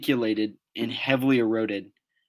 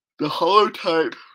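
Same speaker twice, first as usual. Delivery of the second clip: words broken by a yawn, pitched up; 6 semitones higher, 5 dB louder than usual. Describing a dinosaur fossil's holotype, yawning while speaking. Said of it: "Sorry, yawning here".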